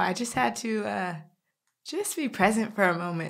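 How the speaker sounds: choked-up voice on the edge of crying. Visiting the spot in Saint Louis where someone was shot, near tears. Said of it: "I'm about to cry now".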